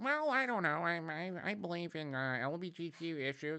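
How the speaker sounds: slow, dragged-out, hesitant, vague celebrity-guest voice. Mocking a podcast guest's answer: Ellen impression. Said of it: "like Ellen or something like".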